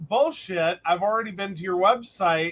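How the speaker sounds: ordinary talk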